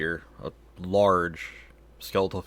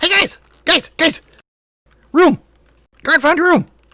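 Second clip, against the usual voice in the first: goblin voice, much higher and louder; 13 dB louder than usual. Game master voicing a goblin popping out of a crack to the party, goblin voice. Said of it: "Goblin head pops out of the crack".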